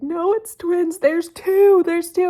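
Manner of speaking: high, loud, tearful insistence through sobs. Retelling telling office coworkers about twins: retelling own crying words. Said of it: "I'm crying while I'm saying this".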